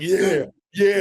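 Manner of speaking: high, loud, put-on confident big-shot voice. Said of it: "playing a role".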